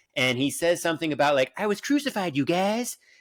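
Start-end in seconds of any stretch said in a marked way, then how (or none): 1.6-3.0 pitched-up, only halfway cartoon-style voice. Quoting a Jesus line from a musical: half-Cartman voice. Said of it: "in a Cartman style, not fully Cartman".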